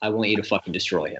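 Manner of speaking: hushed, close-range half-whisper. Voicing Godric, who pulls a player close: Godric half-whispering. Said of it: "pulls you down within whispering range and he goes".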